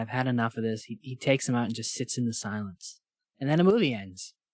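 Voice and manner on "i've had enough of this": normal talking voice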